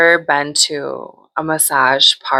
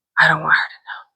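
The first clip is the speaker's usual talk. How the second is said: mock-nervous, put-on nervous manner. Retelling how he answered after his massage, acting out all nervous. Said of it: "like all nervous".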